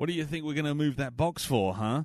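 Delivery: mock-sarcastic acted tone. Describing a game scene, the speaker acts out a character's reply: mock-sarcastic retelling. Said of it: "the sarcastic response".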